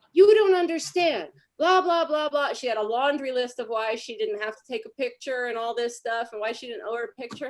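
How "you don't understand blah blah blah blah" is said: high, loud screaming rant, word after word. Retelling how a woman yelled at a 17-year-old girl: imitating someone screaming. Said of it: "She screamed at her and said".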